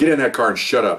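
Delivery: ordinary talk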